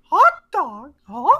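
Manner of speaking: squeaked out, high-pitched and loud. Recounting what they did after the stream, Mickey Mouse voice. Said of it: "I was doing my Mickey voice".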